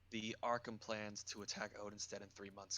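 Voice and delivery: hushed whisper. In a role-play scene, a character leans in to report trouble: whispering. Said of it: "Are you whispering".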